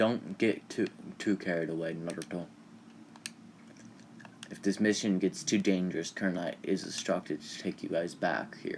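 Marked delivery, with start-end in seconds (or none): none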